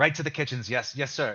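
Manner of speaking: put-on eager boy voice. Voicing Arlo perking up after being sent to the kitchens: perked-up eager boy. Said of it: "He kind of perks up for a second".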